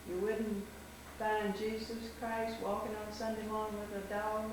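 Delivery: ordinary delivery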